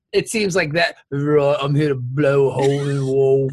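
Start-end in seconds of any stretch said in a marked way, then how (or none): 1.1-3.5 put-on Cockney accent. Describing a film's Cockney explosive expert and speaking as him, in a Cockney accent. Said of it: "a Cockney accent explosive expert".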